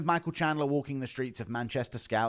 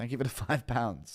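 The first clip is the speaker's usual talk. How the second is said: normal talking voice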